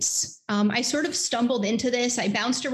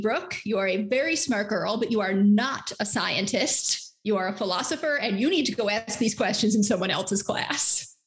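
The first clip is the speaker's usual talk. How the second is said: put-on stern voice. Retelling what a professor said after losing patience, imitating a stern professor. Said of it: "he very sternly said to me".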